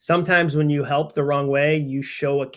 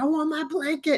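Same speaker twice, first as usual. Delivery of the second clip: put-on very high, screaming toddler voice; 13 semitones higher, 4 dB quieter than usual. Retelling a child at night asking for her blanket: imitating a child screaming. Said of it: "she was screaming".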